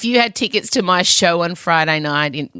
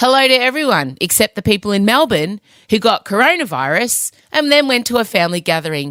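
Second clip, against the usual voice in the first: ordinary talk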